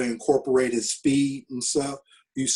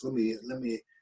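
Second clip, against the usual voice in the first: mild, soft, quiet soft-spoken manner of speaking; 8 dB quieter than usual. Retelling a phone call before going to Saskatchewan, Hugh Campbell's soft voice. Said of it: "in his soft voice".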